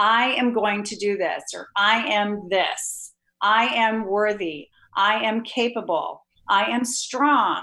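assured, confident, slow and certain delivery. Demonstrating confident language as opposed to tentative language: confident, certain tone. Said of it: "do you hear the certainty in my voice".

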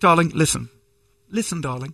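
quietly spoken, soft, hushed, tender voice. Recounting how a man addresses the speaker: imitating his quiet talk. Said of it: "and he talks so quietly".

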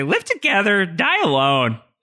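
whiny voice, slow, drawn out and swooping. Recalling what Jack would always say, in a whiny Jack voice. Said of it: "didn't really like whiny Jack voice".

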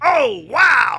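lifted, excited tone. Asked for best MMA impressions, the speaker does an excited Joe Rogan impression. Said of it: "I can kind of do him when he's excited".

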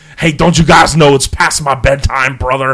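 loud, high, put-on blend of two voices. Joking about a phone call, doing a Hogan-Schwarzenegger mix voice. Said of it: "That was a cross between Hogan and Schwarzenegger".

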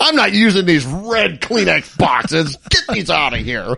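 mock upset, complaining grumbling. Mocking another speaker's upset complaint about box colours: imitating an upset complaint. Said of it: "He's been upset about it".

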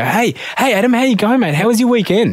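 upbeat high-energy voice. Showing how an upbeat person greets a room, as opposed to low energy: upbeat high-energy greeting. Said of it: "As opposed to if they come in and go".

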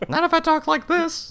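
very high, little cartoon mouse voice. Planning to rob someone in a game, the speaker disguises his voice: Mickey Mouse voice. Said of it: "you always default to Mickey".

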